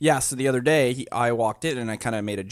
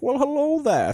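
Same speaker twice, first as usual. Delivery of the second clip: very high-pitched, joking, playful put-on voice; 4 dB louder than usual. Retelling greeting the puppy begging for food: Bane voice. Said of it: "calling him a Bane Corso".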